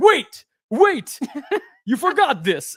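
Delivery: high, slow shout with big pitch swoops. A man runs after the speaker, retold shout in Cyclops voice. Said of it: "shouting in the Cyclops voice".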